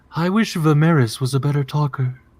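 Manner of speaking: distant whisper. Voicing a Furbolg heard while cutting into fish: distant Furbolg whisper. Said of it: "the distant whisper of a Furbolg saying".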